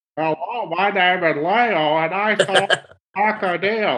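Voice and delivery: taunting, mocking put-on voice, high and slow. Just asked if he's mocking someone's voice, he does it: mocking someone's voice. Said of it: "that doesn't feel very good when somebody else does it".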